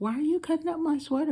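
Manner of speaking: mock very high half-yell. Retelling a man cutting up the speaker's sweater, reenacting kind of yelling. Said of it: "I'm like kind of yelling".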